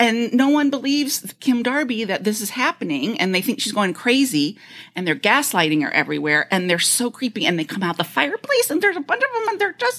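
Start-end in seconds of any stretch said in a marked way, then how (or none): 8.0-10.0 put-on high-pitched goblin voice. Describing a horror movie's creatures to a listener, in a goblin voice. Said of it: "The goblin voice".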